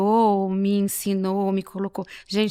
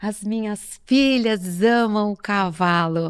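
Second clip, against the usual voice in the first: slow, puffed-up, proud bragging tone. Retelling a friend boasting about his daughters: imitating a proud boast. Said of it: "ele fala com a boca cheia".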